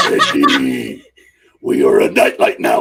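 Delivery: very low, loud put-on voice.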